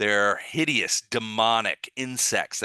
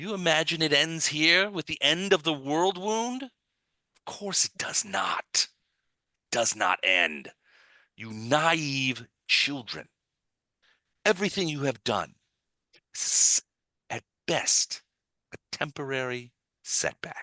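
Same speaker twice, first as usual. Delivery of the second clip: put-on high, heavily accented, chittering cricket creature voice; 6 semitones higher than usual. A storyteller voices a huge cricket-like creature speaking to the listeners, chittering insect creature voice. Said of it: "he sort of chitters".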